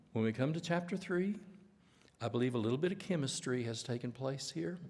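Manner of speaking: put-on soft, quiet voice. Quoting a man reading Ruth with the class, imitating Hugo McCord's soft voice. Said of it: "such a soft voice, and he talked to us like this".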